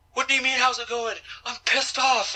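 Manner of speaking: put-on high, angry outburst. Retelling an interview where Justin Credible answers after being fired: imitating Justin Credible freaking out. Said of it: "he's freaking out".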